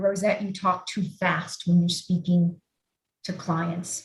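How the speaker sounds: usual speaking voice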